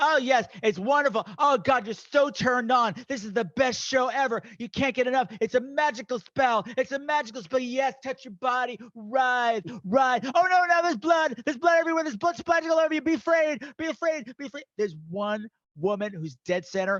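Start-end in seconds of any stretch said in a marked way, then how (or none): 0.0-14.6 raised, high yelled voice. Retelling how the director yelled at bachelorette extras on set: imitating someone yelling. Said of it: "He's yelling at them".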